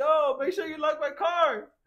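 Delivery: very high, shrill, drawn-out yell. Retelling shouting to a friend across the street: retelling own yell. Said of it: "I just yelled to George".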